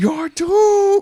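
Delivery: shrill, very high, vengeful villain cry. Retelling a film villain repeating a line: imitating a repeated yell. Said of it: "He says it, like, four times".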